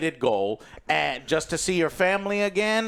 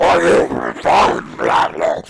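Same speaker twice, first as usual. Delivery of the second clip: very deep, very loud, very slow, rough villain voice; 13 semitones lower, 10 dB louder than usual. Retelling a movie scene, imitating the movie villain's voice. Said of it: "asks like this".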